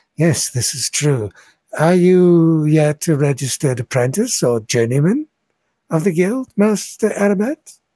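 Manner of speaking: friendly, welcoming voice. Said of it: "with a voice that's friendly".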